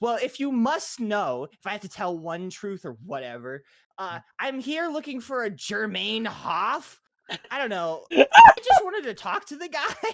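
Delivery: very loud exasperated outburst. Recounting what he said after a big huff, retelling an exasperated huff. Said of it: "does a big huff".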